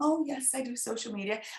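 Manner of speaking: mock modest, soft, meek, self-effacing tone. Retelling meeting a live video expert, imitating her meek, humble self. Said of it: "I was all very meek and very humble".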